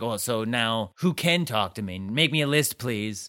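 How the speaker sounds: mock sassy, slow tone with attitude. Retelling Emily's complaint about the rules on the phone: sassy Emily impression. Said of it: "It's pretty sassy".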